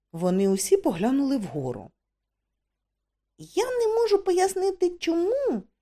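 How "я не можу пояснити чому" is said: faltering, hesitant, very high-pitched voice. Tourist looking up at a cave ceiling with companions; hesitant. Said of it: "нерішуче почав Двоцвіт".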